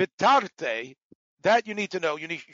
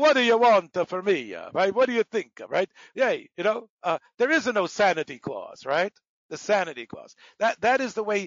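phony, put-on Italian accent; 3 semitones higher than usual. Recounting how Chico talked in his comedy persona, Chico's phony Italian accent. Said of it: "a phony Italian accent".

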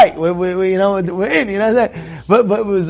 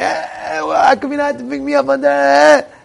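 put-on high, raspy, rough screaming; 6 semitones higher than usual. Retelling a late pickup, the speaker acts out her at the car, retelling a scream. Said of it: "starts screaming".

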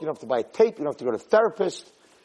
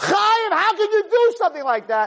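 very high, furious, angry screaming yell. A parent shows how they scream at their son Chayim for doing wrong: screaming at a child. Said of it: "When you're screaming at him and saying".

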